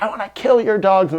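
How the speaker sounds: high, tearful, hateful outburst with mild sobbing. Recounting screaming at the owners of the dogs that bit his dog: retelling a scream. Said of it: "I was screaming".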